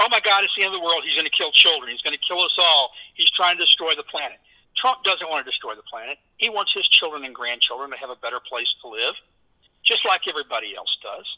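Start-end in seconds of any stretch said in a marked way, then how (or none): none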